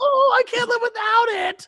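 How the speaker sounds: play-acted very high, slow, blubbering tearful voice. Retelling a reality show contestant who lost his technology, mock crying. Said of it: "he's, like, crying".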